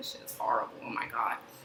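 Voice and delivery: hushed, grumbling whisper. Retelling how someone whispered behind another's back: imitating someone whispering.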